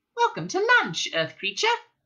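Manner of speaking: tiny, very high squeak of a voice. An unseen host at the table welcomes Arthur to lunch, small voice. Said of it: "A small voice said".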